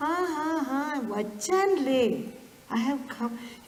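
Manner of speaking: chuckling reply in a distinctive tone. Retelling how Swami answered a lady's repeated invitation: imitating Swami's tone of voice. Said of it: "in that tone of voice".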